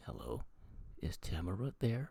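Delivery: deliberate, unhurried, each word slowly drawn out. Retelling a mysterious phone call from a TV episode: Brad Dourif voice. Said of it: "in a voice like".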